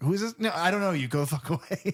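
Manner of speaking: high voice with a touch of panic. Retelling a film scene, the voice at the door answering Susie, imitating a panicked voice. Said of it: "it's a little panicked almost".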